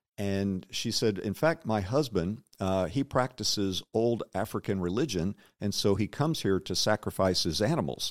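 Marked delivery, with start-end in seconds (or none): none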